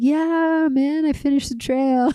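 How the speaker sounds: play-acted nonchalant, laid-back, super chill, offhand tone. Retelling how Tohi lay in his hammock after finishing the trail: imitating Tohi, super chill. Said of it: "super chill".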